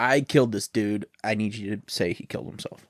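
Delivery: ordinary delivery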